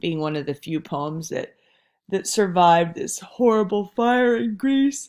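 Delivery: talking through a yawn. Speaker explaining the Odyssey to listeners, yawning while talking. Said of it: "Pardon me for yawning".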